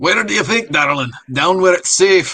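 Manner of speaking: put-on Scottish-accented voice. Voicing a character's line during a read-through: Scottish accent. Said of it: "That sounds Scottish to me".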